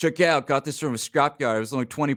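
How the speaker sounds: put-on high, confident, cocky New York guy accent. Retelling a guy pulling out a radio, imitating a confident New Yorker. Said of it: "just a very confident New York guy".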